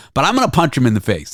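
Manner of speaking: normal talking voice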